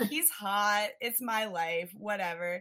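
plain

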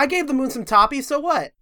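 put-on swaggering bravado. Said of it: "that's some bravado".

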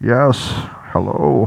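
supervillain voice. Trying out an entrance for the audience, in a Bane voice. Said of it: "as Bane".

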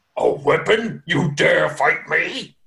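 slow, heavy, lumbering giant voice. Voicing a giant who notices a dangling blade: giant speaking. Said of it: "and he's like".

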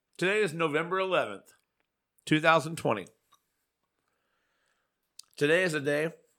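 talking with mouth full. Introducing a holiday topic on a show about eating, chewing while talking. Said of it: "You're chewing so much".

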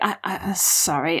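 whispering. In a role-play scene, voicing their character to Nina before walking out, whispering. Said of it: "I whisper".

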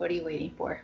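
flat, level, unvaried monotone reading. Reading a script line so listeners can't tell whose it is: monotone. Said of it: "I'm going to read it monotone so you don't know".

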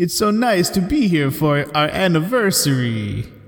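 slow, drawn-out put-on vampire voice. Improvising a special-occasion line as Dracula: Dracula voice. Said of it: "your Dracula kinda sounds like Eddie Murphy".

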